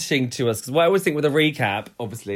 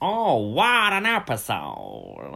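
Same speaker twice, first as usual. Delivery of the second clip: very slow, sing-song, drawn-out purr with swooping pitch. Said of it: "Can you do it?".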